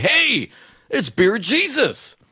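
high, drawn-out yell. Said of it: "yelling at me".

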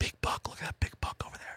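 hushed, quiet whisper. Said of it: "whispering like they do on hunting shows".

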